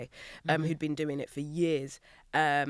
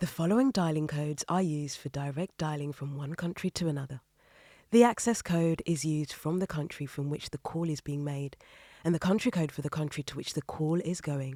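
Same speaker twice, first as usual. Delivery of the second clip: warm broadcast voiceover, announcer reading voice. Reading a boring text aloud on request, in a warm BBC voice. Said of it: "so you want something warm?".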